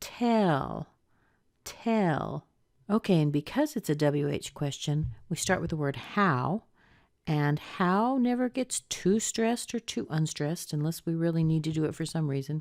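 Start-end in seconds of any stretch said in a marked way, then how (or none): 0.0-2.4 pitch rises to a peak on tell, then falls. Teaching intonation in a WH question, demonstrating a rise then fall on 'tell'. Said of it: "we're going to have a rise right there".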